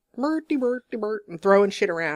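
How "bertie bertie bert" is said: nonsense babbling chatter in a puppet-style chef voice. Joking about a messy work process: Swedish Chef voice. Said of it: "a Swedish chef up in here. I'm like".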